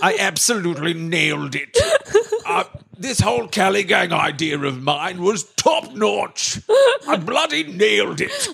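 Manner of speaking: put-on British statesman voice. Imitating Winston Churchill gloating over a plan: Winston Churchill voice. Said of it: "I don't like that voice".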